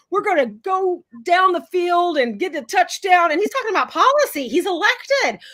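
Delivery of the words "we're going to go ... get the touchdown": put-on Georgia accent. Quoting congressman Tommy Tuberville's words in Congress, Tommy Tuberville Georgia accent. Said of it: "I'm going to do this accent".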